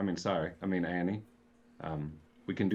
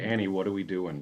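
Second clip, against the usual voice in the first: ordinary talk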